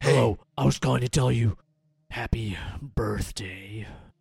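creepy, sinister voice with put-on, forced politeness. Acting out the villain actor's birthday call: put-on sinister voice trying to sound nice. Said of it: "I'm going to sound so sinister".

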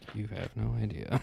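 muttered under the breath. Saying goodnight to a brother, an aside under the breath. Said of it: "I'm under my breath".

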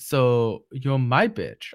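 put-on thick, heavy Eastern European accent. Retelling a scene, quoting a woman in it: heavy Eastern European accent. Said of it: "with like this like heavy Eastern European accent".

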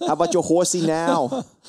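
put-on New York accent. Imitating a friend's taunt over a bourbon choice: put-on New York accent. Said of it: "I can hear him in his New Yorker accent".

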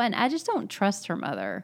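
normal talking voice

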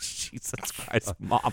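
breathed out slowly and softly.

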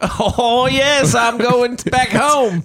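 very high, slow, obnoxious fake Cockney accent. Answering about talking like that in london: put-on cockney accent. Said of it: "You gonna do that when we go to London?".

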